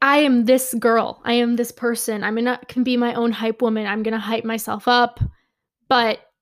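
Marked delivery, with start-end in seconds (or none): none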